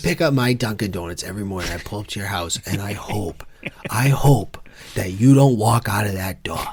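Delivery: put-on Boston accent on every word. Performing a bit for the other speaker, in a Boston accent. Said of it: "anytime we can get the Boston accent".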